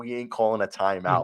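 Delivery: ordinary talk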